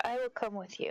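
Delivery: gentle, kindly calling out. In a role-play, a character offers to go with a man to an emergency: softly calling out. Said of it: "then softly call out to the guy".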